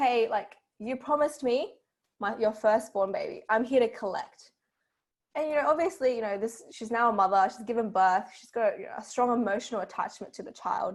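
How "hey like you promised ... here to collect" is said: ordinary talk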